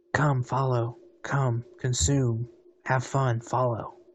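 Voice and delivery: whispered voice. Voicing a whisper that a player hears in their head: whispering voice in the head. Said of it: "And the whispering is saying".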